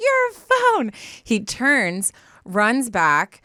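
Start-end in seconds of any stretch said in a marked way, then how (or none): 0.0-0.9 very high-pitched, screamed yelling call. Retelling calling after someone who dropped a phone: retelling own screaming. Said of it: "So I'm, like, screaming".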